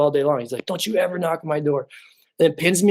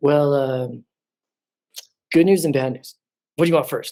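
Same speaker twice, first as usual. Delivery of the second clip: put-on sassy male voice. Retelling what a hair specialist said about a bald spot: imitating a sassy guy. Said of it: "he's a very sassy guy".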